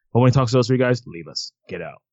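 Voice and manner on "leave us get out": very low, very quiet, hushed flat monotone. A speaker acts out a character ordering three guys out, imitating a flat monotone. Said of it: "He's just sitting in a monotone voice".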